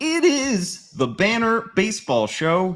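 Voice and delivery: voice breaking mid-line, high and loud crack. Opening the banner baseball show, voice cracking. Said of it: "did you hear that voice crack?".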